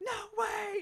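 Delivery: very high, loud, disbelieving, exasperated outburst. Retelling a movie scene where the rental car is gone: imitating someone losing it. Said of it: "this is when he just loses it".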